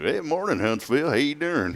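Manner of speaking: put-on Central Texas accent. Pretending to open the show, weird Central Texas accent. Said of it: "It's like a weird Austin, Central Texas slash I don't know what I'm doing in Texas trying to be cool accent".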